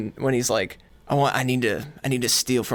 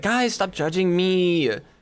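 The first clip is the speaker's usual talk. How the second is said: put-on silly, annoying, high, drawn-out, whiny girly voice; 6 semitones higher than usual. Acting out being drunk in a Discord call, in a mock-whiny silly girly voice. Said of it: "in that silly like girl way that's like annoying".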